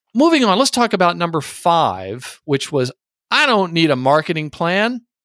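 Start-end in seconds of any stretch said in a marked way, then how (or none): 3.3-5.0 tried-on American accent. Going through point five on a list, in a put-on American accent. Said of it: "I just tried to say that with an American accent".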